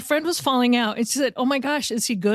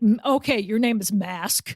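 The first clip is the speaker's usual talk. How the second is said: put-on mocking, teasing tone; 2 semitones lower than usual. Retelling a friend teasing a player about his name: imitating someone mocking. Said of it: "making fun of him".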